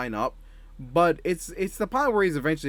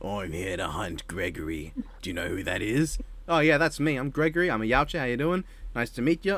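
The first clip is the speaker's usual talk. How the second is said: put-on Australian accent, lower; 4 semitones lower than usual. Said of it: "Aussie outback".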